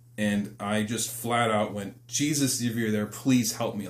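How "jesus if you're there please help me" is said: acted desperate, tearful crying voice. Recalling being caught and calling on Jesus, retelling a desperate crying plea. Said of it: "Like I was like crying like desperate".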